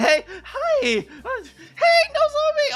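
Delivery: put-on high nervous voice. Acting out your nervous past self greeting someone at the door, put-on high nervous voice. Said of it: "my my voice is so high".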